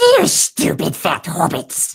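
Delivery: loud creature voice with swinging, swooping pitch. Naming a more fitting character after listing eighties superheroes: Gollum voice. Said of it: "That's more like, ... that's like a more Golem Smeagol thing".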